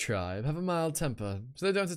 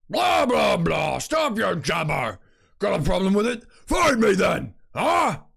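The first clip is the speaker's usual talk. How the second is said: very loud, high, belted-out character voice; 5 semitones higher, 9 dB louder than usual. Voicing the character Rock in the game's dialogue: Rock voice. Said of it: "the voice I do for Rock".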